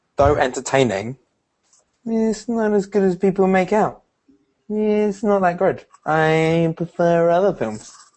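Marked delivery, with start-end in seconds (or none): 2.1-7.9 goofy put-on voice, high and silly. Giving a controversial opinion about a film: funny voice. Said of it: "I'm doing a funny voice".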